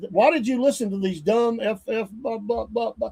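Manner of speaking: put-on screaming. Retelling a confrontation, acting out a man screaming at his kids. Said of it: "He was screaming at his kids".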